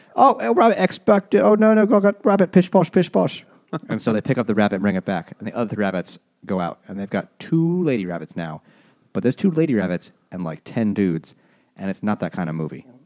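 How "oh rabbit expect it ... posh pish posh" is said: very high, dreadful fake Cockney accent. Retelling a movie scene, voicing a human character in the worst Cockney accent. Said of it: "the worst Cockney accent in the world".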